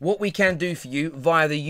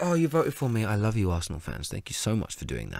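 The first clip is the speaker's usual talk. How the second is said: very low, swooping, gushing voice; 7 semitones lower, 6 dB quieter than usual. Imitating a player thanking fans who voted for him: imitating Lacazette thanking fans. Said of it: "He won't say it like that either".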